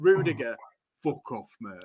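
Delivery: very low, soft, deep Yorkshire growl. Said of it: "more and more Yorkshire".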